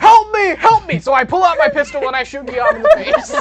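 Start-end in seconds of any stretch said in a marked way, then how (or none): 0.0-1.0 drawn-out, high, loud yelling. Voicing a man in the game scene who calls out: yelling for help. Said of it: "the man yells".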